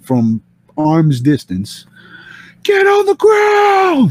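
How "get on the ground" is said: mock very high, drawn-out scream. Retelling how a cop with a gun screamed from arm's distance: imitating a cop screaming. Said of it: "he screams at me from".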